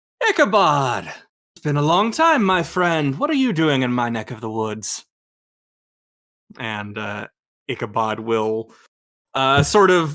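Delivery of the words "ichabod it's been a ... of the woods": lively, expressive, animated character voice, swooping pitch. Voicing a character who greets an old friend: Achillea character voice. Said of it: "Achillea, uh, turns to the two of you and goes".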